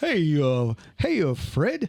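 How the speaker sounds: very slow, drawn-out, swooping cartoon caveman voice. Asked by the group to do a cartoon character's voice, a cartoon character impression. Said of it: "can you do his voice?".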